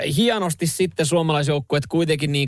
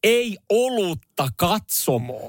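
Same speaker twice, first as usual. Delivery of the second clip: high, heavily over-articulated, every syllable spelled out; 5 semitones higher than usual. Retelling what someone told a security guard, loud and over-articulated like a Finnish tourist. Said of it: "hyvin artikuloiden ja kovalla äänellä".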